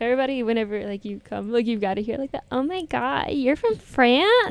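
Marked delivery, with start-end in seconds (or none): 2.5-4.5 put-on gushing American girl voice, drawn out. Mimicking someone learning you're from France, imitating an American girl. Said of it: "Your impression of the American girl is really good".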